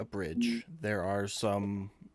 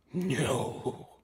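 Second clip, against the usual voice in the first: acted horse-like voice; 3 semitones higher than usual. Voicing a horse answering a question: horse voice. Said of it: "my best attempt at a horse saying no".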